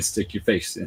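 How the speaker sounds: plain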